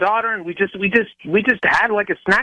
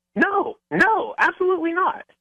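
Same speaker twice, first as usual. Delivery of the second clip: very high, slow, drawn-out, defensive tone; 9 semitones higher than usual. Denying plans to meet a woman at Disneyland: sounding defensive. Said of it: "You sound a little defensive about it".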